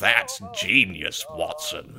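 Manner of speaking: snobby, posh British accent.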